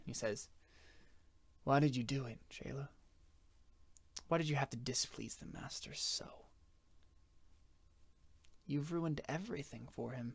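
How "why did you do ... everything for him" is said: sorrowful in-character voice. Voicing a captor who shakes his head at the prisoner: sadly, in character. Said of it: "shakes his head, almost, like, sadly".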